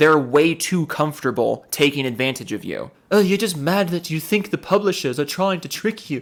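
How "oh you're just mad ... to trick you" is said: higher-pitched, sneering mock British accent. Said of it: "I made him British".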